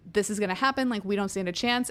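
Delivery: ordinary talk, nothing marked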